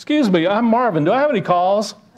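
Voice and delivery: fed-up, exasperated voice. Retelling a joke, a caller phoning the same number again: imitating an exasperated caller. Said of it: "That's exasperation".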